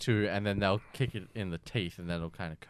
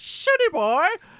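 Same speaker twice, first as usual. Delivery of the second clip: put-on whistling-teeth voice, higher and louder; 10 dB louder than usual. Recalling a cartoon catchphrase for friends: Gopher voice, whistling through teeth. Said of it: "the whistle in his teeth".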